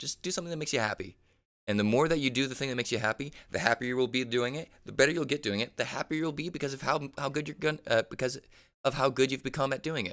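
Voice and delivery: talking fast, all fired up, rapid excited rush. Speaker giving advice to viewers, talking fast, excited. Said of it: "I know I'm talking fast".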